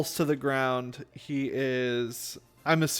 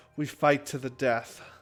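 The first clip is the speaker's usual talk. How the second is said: spoken tightly through gritted, clenched teeth. Voicing an opponent in a tabletop game: through gritted teeth. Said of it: "he looks at you through gritted teeth and says".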